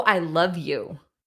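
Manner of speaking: ordinary delivery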